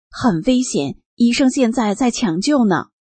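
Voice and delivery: normal talking voice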